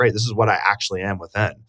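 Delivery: ordinary delivery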